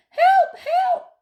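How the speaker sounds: tiny, scared, very high, small cry. Narrator reads the grandmother crying out from inside the wardrobe; small voice crying out. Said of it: "Cried a small voice from the wardrobe".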